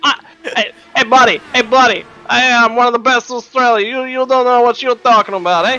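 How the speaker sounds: half-convincing, attempted New York accent. Joking about a past motorcycle title to another speaker: attempted New York accent. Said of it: "Is that an attempt at a New York accent?".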